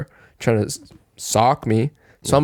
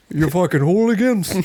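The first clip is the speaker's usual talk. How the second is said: pitched-up, fed-up, irate scolding tone; 7 semitones higher than usual. Chasing people off a property in a joke bit: Hank Hill voice. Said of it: "Go full Hank Hill".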